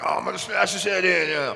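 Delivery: rough brash trash talk. Saying he would never boast at a press event: mock trash talk. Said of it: "I'm not a shit talker. I'm not a person that's gonna be up here being like".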